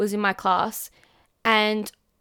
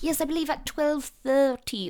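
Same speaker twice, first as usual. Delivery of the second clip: over-the-top, exaggerated English accent, pitched up; 5 semitones higher, 4 dB quieter than usual. Acting out how they speak without meaning to, exaggerated English accent. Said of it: "over exaggerated English accent. I'm like, ... I'll say it like that".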